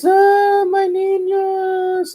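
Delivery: put-on, very high, tearful crying ghost voice. Retelling the legend someone told about the ghost, imitating La Llorona crying. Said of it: "And she fucking cries".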